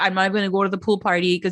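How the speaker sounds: usual speaking voice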